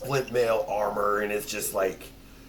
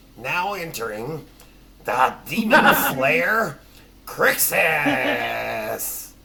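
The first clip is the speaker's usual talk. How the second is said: silly, high, loud cartoon goblin voice; 5 semitones higher, 7 dB louder than usual. A player is asked to announce an entrance in a funny goblin voice. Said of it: "Doing your funniest goblin voice then".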